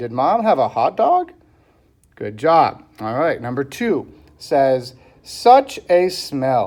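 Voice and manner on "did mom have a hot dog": rising question tune on hot dog, lift on dog. Reading a sentence aloud to show a question mark, using question intonation. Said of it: "I have to change my voice a little since I'm asking a question".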